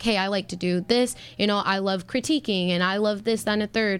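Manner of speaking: ordinary talk, nothing marked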